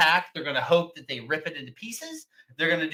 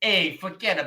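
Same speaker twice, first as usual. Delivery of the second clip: New Yorker way of talking. Joking around with the other speakers, in a New York accent. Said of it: "I don't know why we're doing New York accents".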